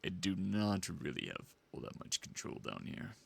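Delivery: extremely low, deep voice at bottom of range. Demonstrating pushing the voice as low as it can go: extremely low voice. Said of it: "this is probably going to be like my extreme low".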